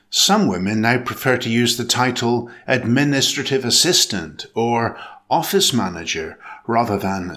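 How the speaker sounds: ordinary talk, nothing marked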